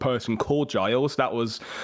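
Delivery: plain reading voice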